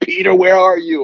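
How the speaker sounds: very high-pitched, thrilled, excited yelling. Retelling fighting a fish alone, calling out for his fishing buddy, retelling a yell. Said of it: "I'm like yelling".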